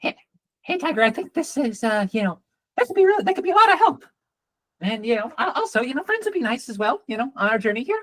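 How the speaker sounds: very fast, high, feminine talking cat voice. Retelling what the green cat says to tiger: talking very, very quickly. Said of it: "Talking very very quickly".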